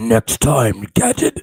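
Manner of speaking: deep, low monster voice. Imitating the villain Claw from Inspector Gadget: Dr. Claw monster voice. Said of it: "that's a monster voice".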